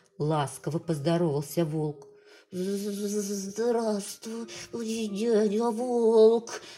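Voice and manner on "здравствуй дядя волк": trembling, shaky voice, much slower. A little hare greets the wolf who decided to eat him, trembling voice. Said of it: "Дрожащим голосом ответил".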